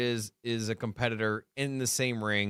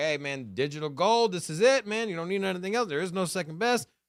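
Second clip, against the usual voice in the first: hyped, true-believer sales-pitch voice; 7 semitones higher than usual. Imagining another person pitching a Bitcoin product: Michael Saylor voice. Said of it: "He could sound like Michael Saylor and be like".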